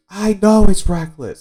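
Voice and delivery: shrill, high, loud, full-throated tearful scream. Retelling a scene where the mayor answers Nami, acting out Boodle's tearful scream. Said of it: "Boodle just kind of screams".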